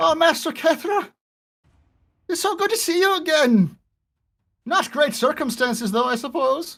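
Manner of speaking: put-on Irish accent. Voicing Fiog greeting Master Kethra after being slapped awake: Irish accent as Fiog. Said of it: "Like Irish, I think".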